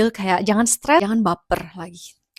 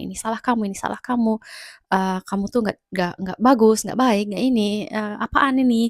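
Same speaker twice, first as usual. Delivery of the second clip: usual speaking voice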